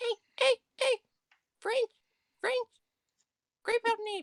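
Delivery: very high, squeaky draconic dragon voice. Knocking a nail like a claw, the speaker plays a creature: very squeaky draconic voice. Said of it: "in a very squeaky draconic voice".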